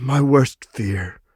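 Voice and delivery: tiny, quavering, trembling voice. Narrator voices a father answering his pleading child in a small, trembling voice. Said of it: "he said in a small, trembling voice".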